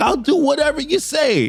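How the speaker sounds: acted pleading, begging tone. Retelling a comic scene, a doctor begging a captor: imitating a pleading plea. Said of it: "she's trying to plead".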